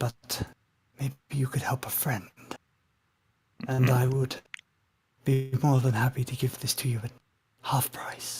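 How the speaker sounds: voice dropped right down. A character, looking around shiftily, speaks to the players: lowered voice. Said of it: "lowers his voice right down".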